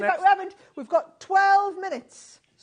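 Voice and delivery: very loud, high, drawn-out, excited shouting. Correcting how many minutes are left, excitedly: shouting. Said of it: "Sorry, I'm shouting now".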